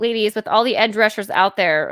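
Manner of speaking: normal talking voice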